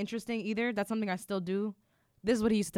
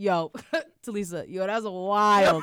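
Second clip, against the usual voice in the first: relaxed, loud, wild, very slow, drawn-out reaction; 6 dB louder than usual. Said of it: "He'd be like".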